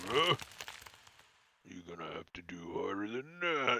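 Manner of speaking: looming, low, hushed bugbear creature voice. Voicing a bugbear looking down at a weak attacker: bugbear voice. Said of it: "The bugbear looks down at you and he's like".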